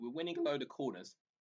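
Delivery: breaking voice, cracking mid-phrase. Commentating on a football match, noting the team's many corners, voice cracking. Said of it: "Voice crack there".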